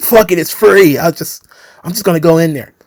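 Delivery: chuckling, carefree, laughing through the words. Speaker retells what a man said, imitating someone laughing while talking. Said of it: "he just starts laughing".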